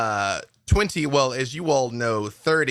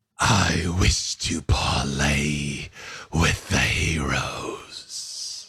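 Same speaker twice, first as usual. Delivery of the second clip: very low, very slow, grand, drawn-out delivery; 9 semitones lower than usual. Voicing a robed figure addressing the heroes, in a booming voice. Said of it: "you hear their voice boom".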